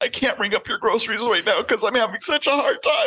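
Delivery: high, whiny voice.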